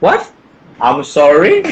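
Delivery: put-on, swooping, sing-song feigned confusion. Speaker acts out answering someone who asks in English, pretending not to hear. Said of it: "saya pura-pura budek aja".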